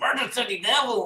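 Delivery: East LA accent with a Spanish tinge. Asked to say the title with a Spanish hint, Cheech Marin accent. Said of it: "say it in like a Spanish hinted voice".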